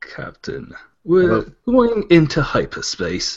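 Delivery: very proper British accent, slow and swooping. Doing a British accent for a captain line, channeling Benedict Cumberbatch. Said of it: "channel Benedict Cumberbatch".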